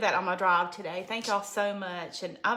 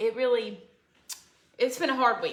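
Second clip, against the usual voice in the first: choked-up voice catching on the edge of crying; 2 semitones higher than usual. Thanking followers for their prayers, about to cry. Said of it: "I'm about to cry".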